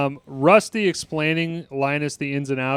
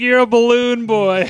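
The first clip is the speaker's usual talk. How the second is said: put-on mocking laugh while talking, higher, louder; 9 semitones higher, 7 dB louder than usual. Retelling a scene where Turk starts laughing at the guys: imitating Turk laughing at someone. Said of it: "He fucking just starts laughing at the guys".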